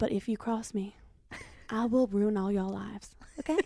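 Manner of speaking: flat, matter-of-fact monotone, every word on one level. Doing an impression of Madison, barely opening the mouth: Madison impression. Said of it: "you do her voice so well".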